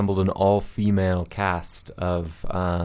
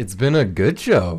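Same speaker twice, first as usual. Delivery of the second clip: loud, oddly surprised sound; 4 semitones higher, 5 dB louder than usual. Saying the show has reached its end, sounding surprised. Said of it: "I don't know why I sound so surprised".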